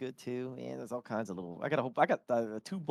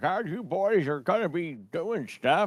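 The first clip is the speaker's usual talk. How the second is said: put-on slow, high, drawn-out old-man voice; 5 semitones higher, 7 dB louder than usual. Testing a character voice before going live: Billy's old man voice. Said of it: "I was gonna do Billy's voice".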